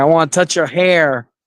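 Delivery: all-out bitchy, catty delivery. Imitating a friend who asks about hair: imitating Leon. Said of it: "I have to go full bitch mode if I wanna sound like Leon".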